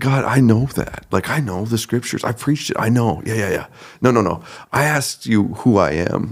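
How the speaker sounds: play-acted irritated, annoyed, exasperated tone. Retelling the answer given to God after the word son: retelling an annoyed reply. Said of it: "I was so annoyed by that answer".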